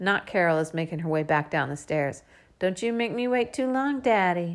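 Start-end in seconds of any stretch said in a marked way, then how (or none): 2.6-4.6 high, sugary, cloying, syrupy sweet voice. Coming down the stairs, a woman calls to the uncle, in a syrupy sweet voice. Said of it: "she says in a syrupy sweet voice".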